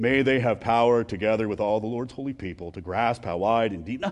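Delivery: very low, deadpan, flat monotone drone. Demonstrating how a prayer should not be said, in a flat monotone. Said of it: "in a monotone voice like he's ordering something".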